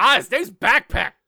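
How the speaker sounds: mock sudden exclamation. Picturing the other speaker alone in an office, acting out a sudden exclamation. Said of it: "and just suddenly just going".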